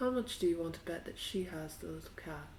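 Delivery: barely-there half-whisper, very quiet. In a tabletop game, her character looks at Kane and speaks to him: half-whispering very quietly. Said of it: "she whispers very, very quietly".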